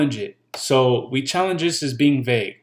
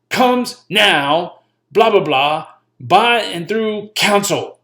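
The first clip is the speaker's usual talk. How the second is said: loud, high, harsh, as angry as possible; 6 semitones higher, 5 dB louder than usual. Advising how to say it when reading out loud: most angry voice possible. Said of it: "say it in the most angry voice possible".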